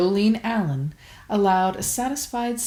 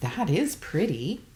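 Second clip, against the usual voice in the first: usual speaking voice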